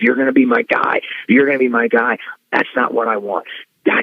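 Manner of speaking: furious, angry scolding tirade with swooping pitch. Retelling how Vince scolded the speaker backstage after a match: retelling Vince yelling angrily. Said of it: "he's yelling at me".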